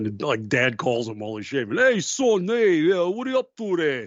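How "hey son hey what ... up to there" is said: put-on thick, heavy Bronx New York accent. Imitating a Bronx dad calling his son while he shaves, heavy New York accent. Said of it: "with the heavy New York accent".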